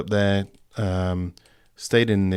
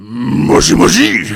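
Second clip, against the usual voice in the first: rough, booming, very loud put-on Japanese man voice; 7 semitones higher, 11 dB louder than usual. Answering the phone as a joke, expecting a call, gruffest Japanese man voice. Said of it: "in my gruffest Japanese man voice".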